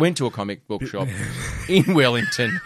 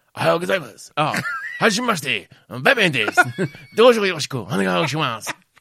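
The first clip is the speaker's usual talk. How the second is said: put-on Japanese accent, pitched much higher; 5 semitones higher than usual. Imagining a Japanese Batman, doing a Japanese-accented Batman voice. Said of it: "We should know a Japanese Batman".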